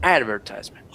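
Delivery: advertisement with stress on first syllable ad-. Showing learners how the us says advertisement: stress on first syllable. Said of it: "With an accent on the first syllable".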